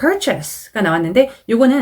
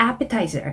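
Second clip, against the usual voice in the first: appetizer with stress on first syllable ap-; 6 dB quieter than usual. Going over exam vocabulary, stress on first syllable of appetizer. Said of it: "a 하고 앞쪽에 강세를 주셔서".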